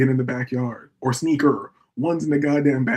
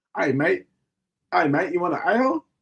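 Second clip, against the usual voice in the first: put-on Australian accent; 4 semitones higher than usual. Imitating Australian women offering a beer: imitating Australian women.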